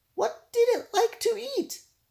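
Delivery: very high, shaky, quavering voice with rising pitch. A narrator reads a story where Timmy asks Arthur a question: Timmy's shaky voice. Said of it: "Timmy asked in a shaky voice".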